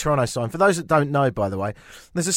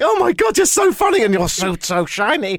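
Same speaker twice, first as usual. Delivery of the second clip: put-on giggling voice, much higher; 7 semitones higher, 4 dB louder than usual. Commenting on a reporter's laugh in a clip, speaker is imitating a giggling reporter. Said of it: "She's giggling".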